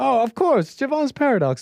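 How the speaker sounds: high, nervous voice putting on mock calm.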